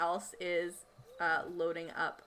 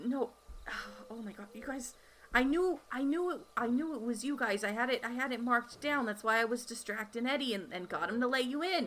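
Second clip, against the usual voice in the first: stammering and repeating words, much higher pitch; 6 semitones higher than usual. Game master voicing a bleeding security guard who recognizes the players; stammering. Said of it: "Um, and he says, / I'll, I'll take care, I'll take care of [name]. But can, can you not, / And he's just bleeding It's like profusely. / I'm getting a cut of the profits from this".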